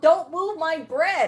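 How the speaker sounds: bossy, slow, drawn-out yell. Retelling an argument over bread at a volunteering table: imitating someone yelling. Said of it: "yelling at me over that".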